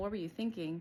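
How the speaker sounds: scornful, contemptuous, accusing tone. Showing how asking kids this question can sound: scornful accusing tone. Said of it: "I'm saying in this tone".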